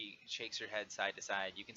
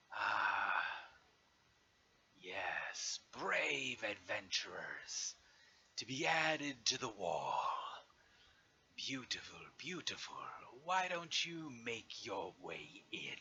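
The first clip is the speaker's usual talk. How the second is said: dragon voice speaking through a laugh. Narrating the scene, the speaker voices the dragon addressing the adventurers, laughing. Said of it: "the dragon laughs".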